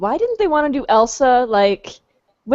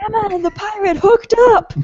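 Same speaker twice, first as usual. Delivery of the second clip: put-on town crier announcing voice, higher pitch; 10 semitones higher, 3 dB louder than usual. Picturing Grumpy running into Granny's with news: Grumpy as a town crier. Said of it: "Town crier".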